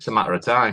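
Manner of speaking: ordinary delivery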